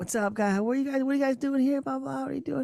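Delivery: rapid, high-pitched New York street patter. Retelling a guy who came out at your hotel: fast-talking New York dude impression. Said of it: "fast talking New York dude".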